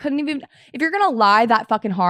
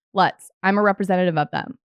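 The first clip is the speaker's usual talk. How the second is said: ordinary talk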